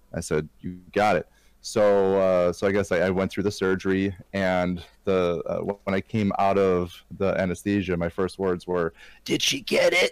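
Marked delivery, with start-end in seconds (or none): 9.2-10.1 little tiny mousy voice, much higher pitched. Retelling their first words on waking from surgery anesthesia, in a little mousy voice. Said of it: "In this little mousy voice".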